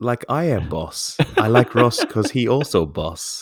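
clumsy fake Russian accent. Praising Ross, speaking in a bad Russian accent. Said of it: "that's some pretty bad Russian accents".

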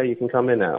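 usual speaking voice

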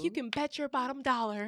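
loud put-on woman's voice.

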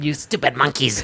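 put-on cartoon villain voice. Talking with a friend about Frieza's voice actress, quoting the villain: Frieza impression. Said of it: "it's fucking Frieza".

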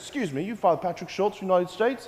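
quick put-on British accent. Retelling how a man in a suit approached him outside a pub, British accent. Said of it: "British accent".

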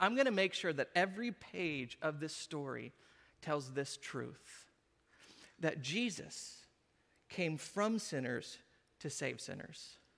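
sly, self-assured, soft, knowing tone. Retelling how the gospel writer, starting with the genealogy, spoke with a little smirk. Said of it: "With a little smirk on his face".

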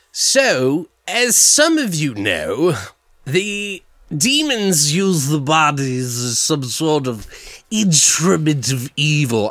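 slow, put-on British accent. Explaining the horror-movie shot to viewers: British Bill Cosby voice. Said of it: "I sound like a British Bill Cosby".

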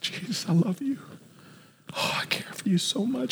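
mock hushed, breathy, tearful crying whisper. Retelling a woman crying at the feet of jesus, imitating someone crying. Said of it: "And she begins to cry".

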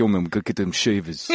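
put-on thick New York accent. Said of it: "his New York accent was so thick".

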